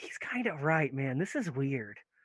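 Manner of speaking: soft, hushed half-whisper. A narrator voices Nate half-whispering into a player's ear, Nate half-whispering. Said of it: "Nate whispers".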